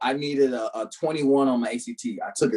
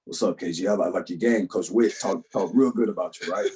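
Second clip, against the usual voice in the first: put-on deep, low coach voice; 5 semitones lower than usual. Retelling a coach coming in and greeting him, in a deep voice. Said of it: "deep voice".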